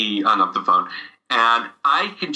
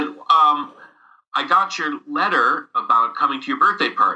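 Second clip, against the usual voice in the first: ordinary talk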